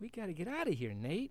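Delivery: urgent, pleading, high begging voice. After seeing a small gnome-like boy run past, he begs his companion: begging. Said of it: "begged Paolo".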